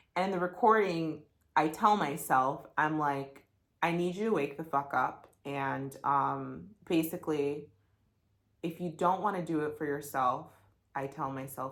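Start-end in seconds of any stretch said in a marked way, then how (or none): none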